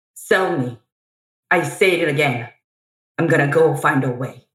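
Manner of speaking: acted dramatic, theatrical monologue-style delivery. Performing part of a monologue from the show after being asked. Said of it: "Can you just give a little sample of part of a monologue?".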